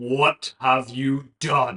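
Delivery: loud, deep, throaty possessed voice. A voice speaking through Randy's mouth asks a question: deep, throaty voice. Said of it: "A deep, throaty voice".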